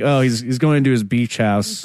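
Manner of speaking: usual speaking voice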